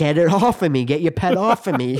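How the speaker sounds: mock, loud shouting yell. Retelling yelling at a girl during a scene: retelling a yell. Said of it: "I'm yelling at the girl".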